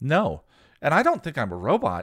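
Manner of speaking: bright, sunny, chirpy cheerfulness, high and loud. Narrator voicing the robot answering Willow, cheerful. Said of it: "The bot activated with a quiet click and the eyes opened. Hello, your name is [name]. You're my friend, the robot said cheerfully".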